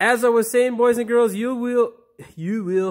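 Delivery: Russian-sounding accent. Addressing the boys and girls watching, sounding Russian. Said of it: "now I sound Russian or something".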